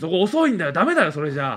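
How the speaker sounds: mock severe, stern, harsh strict-coach tone. Recalling how the coaches used to talk, imitating a strict coach. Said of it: "コーチたちも厳しい口調で".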